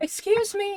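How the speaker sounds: very high-pitched, hollering, yelled shout. Voicing a character who calls to the group to stop: yelling. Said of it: "as you hear a yelling voice".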